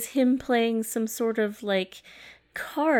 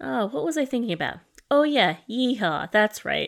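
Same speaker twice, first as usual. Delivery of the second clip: dry, deadpan delivery, faster. Retelling a scene where another character questions Nicolas Cage; retelling Cage's reply dryly. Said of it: "it's said so dryly".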